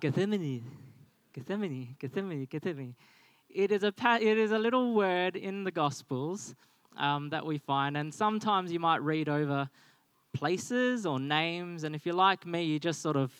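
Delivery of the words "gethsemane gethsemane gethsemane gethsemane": rapid-fire, rushed repetition in quick succession. Leading a group in repeating a word, now saying it really fast. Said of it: "Now say it really fast".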